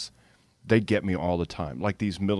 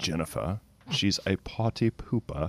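imitated German accent. Repeating the line from a video about Jennifer: imitating a German accent. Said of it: "he talks in this German accent".

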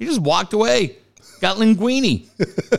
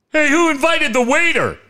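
high-pitched, loud yell. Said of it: "yells across the bar".

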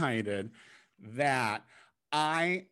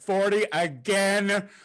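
shouted out across, yelling; 6 semitones higher, 6 dB louder than usual. Calling out a phrase to a guest: yelling. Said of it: "Just yelling that to our guest".

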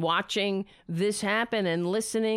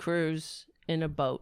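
normal talking voice

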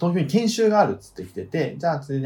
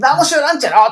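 put-on rough shouting in dialect, higher and louder; 12 semitones higher, 9 dB louder than usual. Retelling own past outburst among others at a bar: retelling own loud rough outburst. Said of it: "とかガーって言ったら".

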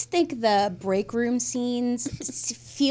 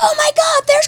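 very high, very loud thrilled excited shriek; 11 dB louder than usual. Recalling the first time seeing the set from the shuttle, retelling a yell. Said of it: "and I yelled".

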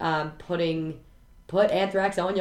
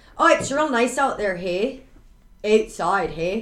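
put-on Canadian Midwest accent; 2 semitones higher, 4 dB louder than usual. One speaker riffs in a put-on Canadian Midwest accent. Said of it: "I just want everything to sound more Canadian and, like, Midwest".

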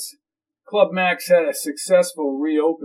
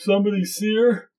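yawning, higher pitch; 4 semitones higher than usual. Narrator reading a character's question during a phone call, yawning.

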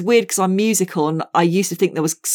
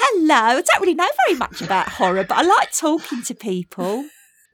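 put-on Essex accent, pitched up and sing-song; 9 semitones higher than usual. Showing off accents on a podcast, doing an Essex accent. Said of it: "Essex is sort of different".

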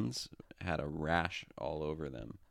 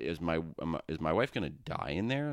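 ordinary talk, nothing marked

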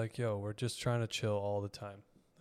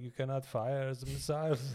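fake French accent, done badly; 3 semitones higher than usual. Telling a joke about French people in occupied Paris, put-on French accent. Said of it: "and whatever the French accent".

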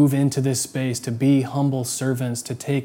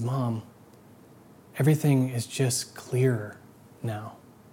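put-on joyful speech, slow, then slower; 5 dB quieter than usual. Retelling a boy answering his mom in the car, retelling slow, joyful words. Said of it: "he said slowly, but with this great joy".

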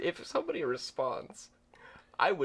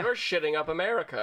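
normal talking voice

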